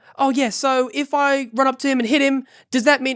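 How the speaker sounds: put-on New Zealand accent, pitched way up. Retelling a question to the DM asked in character: New Zealand accent. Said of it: "a New Zealand accent".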